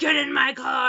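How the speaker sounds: very loud, demanding shouted yell. Retelling how a drunk man in a convertible ordered her into his car: imitating a man yelling. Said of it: "And he's yelling at me".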